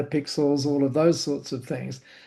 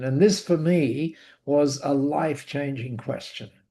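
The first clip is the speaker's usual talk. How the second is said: normal talking voice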